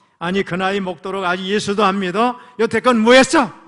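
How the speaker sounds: angry, loud, rude scolding in Korean informal speech.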